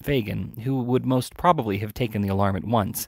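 ordinary delivery

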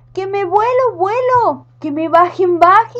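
high, drawn-out, frightened, panicked scream. The witch, rising into the air on a gas balloon, screaming in fear. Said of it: "no paraba de gritarla muy miedosa".

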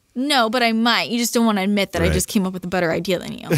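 ordinary talk, nothing marked

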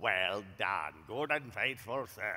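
low, threatening deep voice.

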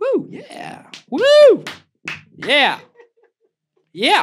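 mock crowd whooping and cheering, very high and swooping. Answering own question about impressions, imitating the audience cheering. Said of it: "That's my impression of you guys".

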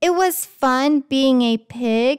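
ordinary delivery

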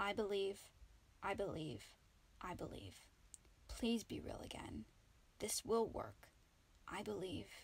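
soft, hushed whisper under the breath. Narrator reads a character whispering a spell over a figure she assembled. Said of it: "then whispered Ombric's first spell".

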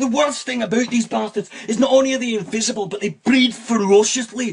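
put-on Scottish accent. Speaker quotes a line from his video that people bring up, in a Scottish accent. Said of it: "I've always liked the Scottish accent to use in comedy".

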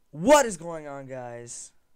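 very loud, pumped-up, high-energy voice. Opening a video and greeting viewers, trying to sound energetic. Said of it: "I'm trying to be more energetic".

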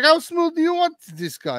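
very high, swooping, swinging put-on Turkish accent. Imitating a Turkish gun maker asking a buyer; imitating Turkish-accented English. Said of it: "Your imitation of English Turkish cracked me up".

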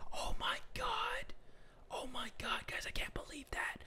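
near-silent, hushed, breathy whisper. Streaming a game just after a character nearly spotted them: whispering. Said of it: "I don't even know why I'm whispering".

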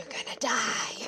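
eerie, creepy, breathy whisper. Creepily following a game character while playing: creepy whisper. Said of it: "just whispering things in her ear, like, saying".

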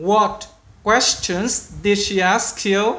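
slow, careful read-aloud for learners. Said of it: "cũng chậm thôi".

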